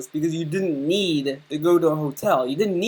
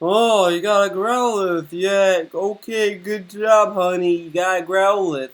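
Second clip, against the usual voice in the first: put-on patronizing, talking-down, condescending dad voice; 2 semitones higher than usual. Mocking how he talks to his partner, in a mock-condescending dad voice. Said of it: "He sounds like a uh, dad. Like that sounded so condescending".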